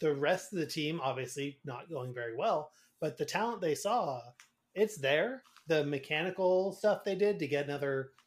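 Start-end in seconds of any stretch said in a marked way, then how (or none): none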